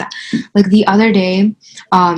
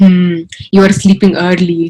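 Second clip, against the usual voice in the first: biting, mean, acted-out sarcastic tone; 2 semitones lower, 3 dB louder than usual. Retelling what mom said at bedtime: imitating mom's mean sarcasm. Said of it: "mean sarcastic".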